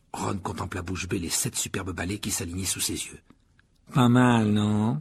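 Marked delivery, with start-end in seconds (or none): 3.9-5.0 sweetly smooth, silky, honeyed, sugary voice. Narrating a story, one boy addresses another in a silky, sugary voice. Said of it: "dit Malfoy d'une voix doucereuse".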